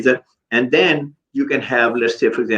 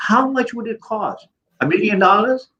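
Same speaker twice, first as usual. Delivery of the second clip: high, sarcastic mock tone. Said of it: "I'm saying it sarcastically".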